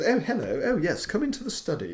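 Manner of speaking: fake upper-class voice. Imitating the actors in an old TV show: imitating a posh voice. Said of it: "and he's a bit posh".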